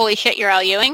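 ordinary delivery

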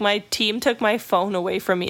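ordinary talk, nothing marked

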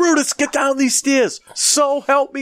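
put-on very high, shrill, threatening shout. Retelling yelling at a dog on the porch: retelling yelling at a dog. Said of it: "So I'm out there yelling at my dog".

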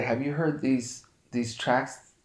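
quiet whispered voice. Retelling a phone call about the tracks: imitating someone whispering. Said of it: "whispering on the phone".

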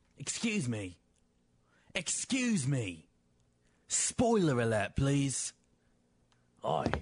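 fake British accent throughout. Announcing a spoiler alert: put-on British accent. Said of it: "J V on a British accent".

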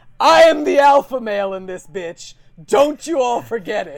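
shrill, booming bellow. Telling a story about a man who slams his arm down and gets up: retelling a yell. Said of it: "gets up yelling like".

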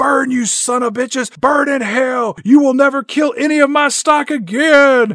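very high, howled-out, drawn-out screaming. Retelling a man's reaction as the mound is set on fire, retelling a scream. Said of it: "Walter just screams out".

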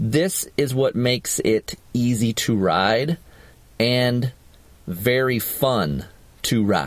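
very slow, deliberate, spelled out word by word. Making a point to listeners and checking he said it slowly: very slow. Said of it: "Did I say that slow enough?".

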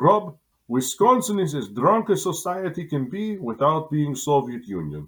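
put-on very thick Belarusian accent. Quoting a friend from a former Soviet state, in a thick Belarusian accent. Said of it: "in his very thick Belarusian accent".

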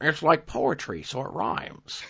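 badly done, slow, whispered put-on voice. Trying to do a voice, a bad George Lucas impersonation. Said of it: "That was a really bad George Lucas impersonation".

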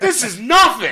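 very high, shrill, loud, mad bitching gripe. Retelling a traveler getting off the plane: imitating someone bitching. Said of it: "just bitching".

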